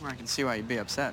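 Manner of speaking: low, fast, sarcastic voice.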